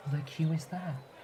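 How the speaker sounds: put-on quiet mutter. Describing a man modifying forms who notices you're still there, retelling a mutter under his breath. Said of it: "He's muttering all of this".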